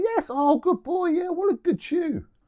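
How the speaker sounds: very high, joyful, excited voice. Praising the dog the moment it chews its toy: really happy, excited voice. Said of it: "use a really happy, excited voice and be like".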